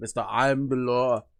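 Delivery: bad put-on gruff action-hero voice. Describing a player's by-the-book character, terrible Sylvester Stallone Judge Dredd voice. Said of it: "my terrible Sylvester Stallone Judge Dredd voice".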